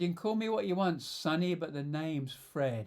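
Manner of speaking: acted, very sardonic, dry delivery. Retelling a company president's reply to a visiting salesman: imitating a sardonic reply. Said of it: "in a very sardonic style".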